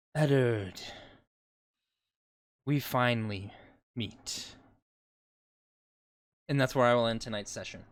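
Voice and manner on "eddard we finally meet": slow, bodiless, disembodied voice. Voicing a voice heard in an obsidian hallway: disembodied voice. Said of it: "you can hear a disembodied voice".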